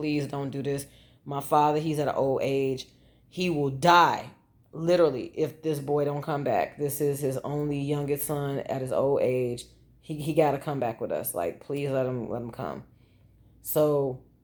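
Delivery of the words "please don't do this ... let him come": usual speaking voice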